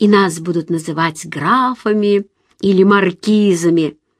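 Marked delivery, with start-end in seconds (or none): none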